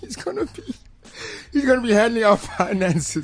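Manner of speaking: high, laugh-broken disbelief, laughing through the words.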